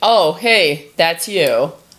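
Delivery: very slow, casual, offhand, dismissive tone. Retelling how her partner reacted to her text: Jack impression. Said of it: "very good Jack impression".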